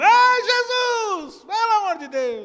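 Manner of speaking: very high, very slow, drawn-out shouting. Telling of a woman in a crowd, imitating her shouting to Jesus. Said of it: "estar gritando no meio da multidão".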